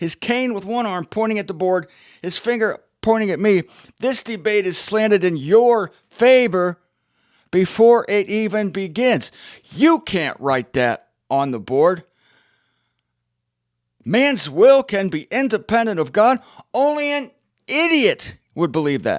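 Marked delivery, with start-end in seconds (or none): 4.0-19.2 put-on loud declaring voice, higher and louder. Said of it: "in a loud voice".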